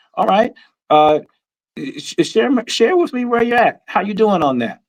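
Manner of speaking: gentle, encouraging tone. Showing how a community member checks on your goal: encouraging, supportive tone. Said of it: "you see my tone".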